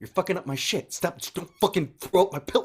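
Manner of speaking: high, pissed-off rant. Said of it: "he gets so pissed".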